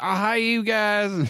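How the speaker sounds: put-on very high, clumsy American accent, slow. Retelling a guest's impression of an American, bad American accent impression. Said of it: "did an impression of an American".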